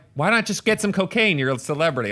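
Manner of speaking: usual speaking voice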